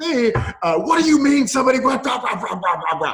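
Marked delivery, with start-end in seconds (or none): 0.8-3.1 put-on furious yelling and screaming, higher and louder. Retelling a phone call to the bank: imitating own past yelling and screaming. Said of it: "I'm just yelling and screaming at this guy".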